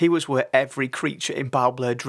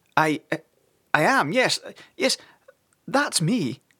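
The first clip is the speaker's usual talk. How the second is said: high, slow, frightened tremble through every word; 5 semitones higher than usual. Sid the snake answers Father's serious question, trembling with fear. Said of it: "a tremor of fear still wobbling in his tone".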